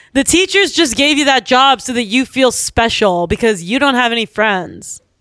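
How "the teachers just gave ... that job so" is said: usual speaking voice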